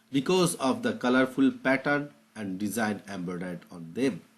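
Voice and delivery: very slow, drawn-out teaching-style reading.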